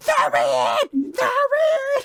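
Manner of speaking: mock-angry yelling. Describing a scene where a talking sword gets mad, imitating an angry yelling sword. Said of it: "the sword just starts yelling".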